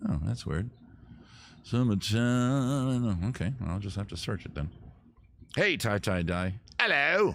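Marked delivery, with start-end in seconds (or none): 5.6-7.4 put-on English accent. Greeting Tie Tie Die by name: put-on English accent. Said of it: "I gave you an English accent".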